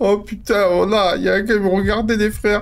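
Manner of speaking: frightened startled cry. Streamer playing a game, spotting a guy who was watching him: scared. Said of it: "que j'ai peur".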